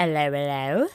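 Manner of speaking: horrible put-on British accent, dropped low. Opening the show with a greeting, in a horrible British accent. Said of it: "that was a horrible attempt at a British accent".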